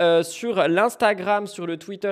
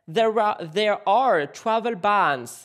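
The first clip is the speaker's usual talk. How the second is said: put-on English accent, switched on. Switching from French to talk about travel bans in a put-on English accent. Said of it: "Je vous le fais avec l'accent anglais".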